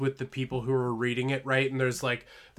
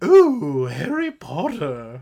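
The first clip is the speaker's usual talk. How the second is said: fake British old lady voice, swooping; 2 semitones higher, 10 dB louder than usual. Retelling a bit that mocks Harry Potter: fake British old lady voice. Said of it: "fake, like, British old lady kind of voice".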